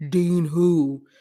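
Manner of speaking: wild, deep bass, crazy put-on voice. Retelling a confrontation, speaker imitates Ronnie answering Neek, Ronnie's deep crazy voice. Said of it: "he got this deep, crazy voice".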